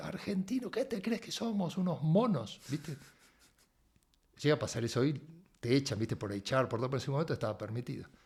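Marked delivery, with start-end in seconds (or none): 0.1-2.6 loud, high-pitched shout. Retelling how a boss yelled across the room: imitating a boss yelling. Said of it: "de punta a punta grita".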